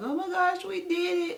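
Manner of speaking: mock tearful crying voice, very high pitch. Retelling a mom's words after giving birth at home: imitating a mom crying. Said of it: "the mom was just crying, like".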